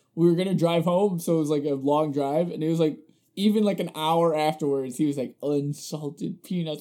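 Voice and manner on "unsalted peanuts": put-on muttering under breath. Retelling what he said on the long drive home, imitating muttering under his breath. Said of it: "you could just hear him under his breath".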